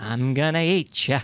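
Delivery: low, camp, effeminate put-on shark voice. Reviewing a movie, mimicking how such films voice the shark: effeminate shark voice. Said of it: "get like some effeminate guy to voice the shark".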